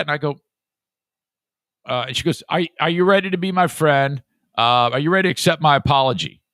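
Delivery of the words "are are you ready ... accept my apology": aggressive, pushy, confrontational, demanding delivery. Retelling a daughter coming downstairs, imitating an aggressive apology. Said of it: "And she's saying it like that".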